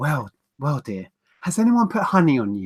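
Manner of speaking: put-on flamboyant, camp man's voice. Retelling what a man said to them, camp impression of a man. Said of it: "it's the way he goes".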